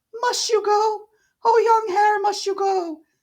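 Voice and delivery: put-on frantic, shrill, very high, hysterical old woman voice. Narrator reads the old lady's words as the traveler is leaving, hysterical old lady. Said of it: "for when I got near the door I faced a cheery looking elderly woman in the usual peasant dress, / for when I got near the door I faced a cheery looking elderly woman in the usual peasant dress, ... th".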